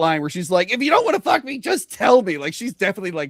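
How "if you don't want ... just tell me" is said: mock exasperation, fed up, pitched up. Quoting a movie character who has had enough: imitating a fed-up tone. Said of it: "she's definitely, like, fed up with it".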